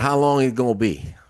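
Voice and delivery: mock, high-pitched, loud called-out shout. Retelling a drive-through worker repeating a question, retelling a shout. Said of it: "just shouts back in rather".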